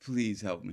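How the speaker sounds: play-acted begging, imploring, pleading tone. Retelling what someone kept saying to himself: imitating someone pleading. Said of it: "He's pleading, bro".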